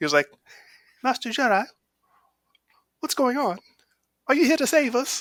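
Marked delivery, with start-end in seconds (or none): 1.0-5.2 put-on very high, tiny little kid voice. Retelling a movie scene, quoting the little kid in his little accent. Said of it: "in his little accent".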